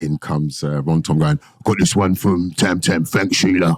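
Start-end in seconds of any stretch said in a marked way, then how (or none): 1.6-3.8 gruff, on-air radio DJ patter voice. Retelling hearing a radio DJ play the record: imitating Ron Tom's gruff voice. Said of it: "That gruff voice of his".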